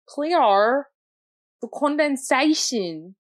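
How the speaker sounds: loud, high, showy fake Australian accent. Doing an Australian accent for the other speaker: put-on Australian accent. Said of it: "I'm gonna do my Australian accent".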